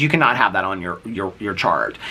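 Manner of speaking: normal talking voice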